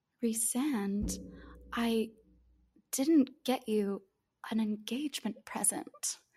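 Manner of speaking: coy, flirty, soft and slow little tone. Retelling a book scene, Feyre speaks to Rhysand before the battle, imitating a coy, flirty tone. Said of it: "in this like sort of like coy, like flirty little tone".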